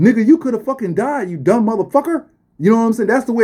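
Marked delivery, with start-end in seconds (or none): 0.0-2.3 furious, angry scolding rant, going hard. Retelling getting caught at Area fifty-one, the speaker imitates people going ham at him. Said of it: "They was going ham at me like".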